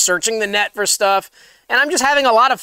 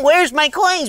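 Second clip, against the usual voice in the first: put-on aggrieved, put-out, upset complaining tone; 4 semitones higher than usual. Retelling own past words at the store: retelling an upset complaint. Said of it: "I'm getting upset".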